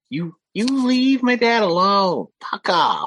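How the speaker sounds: very high, loud, furious tiny creature voice. Voicing a small lizard creature yelling at zombies: angry little creature voice. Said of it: "he is very pissed at these".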